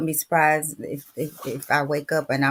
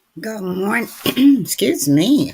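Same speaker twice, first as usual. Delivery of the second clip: loud, high, hoarse, croaky frog voice; 6 semitones higher, 7 dB louder than usual. Speaker greeting listeners on a Wednesday morning, croaky frog voice. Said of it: "Come in with the frog voice".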